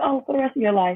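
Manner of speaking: quick, breezy, nonchalant. Retelling a doctor's answer about medication: imitating a nonchalant, quick reply. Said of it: "Just very nonchalant".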